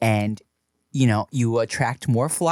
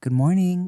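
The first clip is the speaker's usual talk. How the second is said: mock gentle tone, higher pitch; 7 semitones higher than usual. Retelling how she now wakes him: imitating a gentle voice. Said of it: "real gentle".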